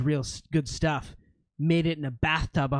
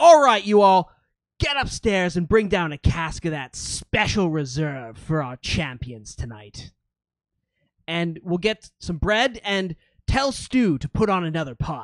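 big, loud booming cry; 4 semitones higher, 6 dB louder than usual. Narrator voicing a small man calling out orders, booming voice. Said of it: "he has this booming voice. And he cries out".

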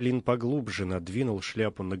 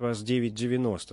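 usual speaking voice

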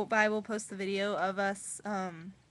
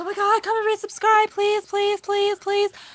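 put-on, shrill, annoying, very high, loud whiny pleading; 11 semitones higher, 13 dB louder than usual. Mocking annoying subscriber begging: mock annoying begging. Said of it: "We don't wanna be, like, annoying, like".

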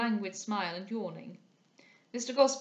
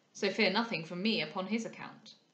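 plain

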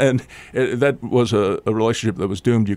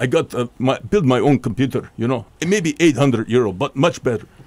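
put-on Russian-accented voice. Quoting a Russian student answering the speaker's question: put-on Russian accent. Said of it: "he said in his Russian accent".

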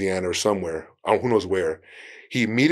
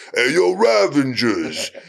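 mocking put-on tough-guy voice, higher and louder; 5 semitones higher, 5 dB louder than usual. Retelling a comedic actor making fun of Sylvester: mocking Sylvester Stallone impression. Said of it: "he starts making fun of Sylvester".

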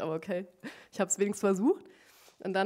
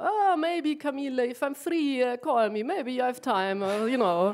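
put-on casual English spoken with an Italian accent; 4 semitones higher, 5 dB louder than usual. Speaker quotes a man who speaks English with an Italian accent. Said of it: "aber mit so einem italienischen Akzent".

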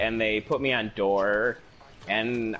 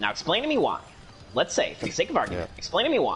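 high, put-on debater voice, insistent and pressing; 5 semitones higher than usual. Sharing a favorite go-to impression line: Ben Shapiro impression. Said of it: "Whenever I want to do an impression of Ben Shapiro, I just say".

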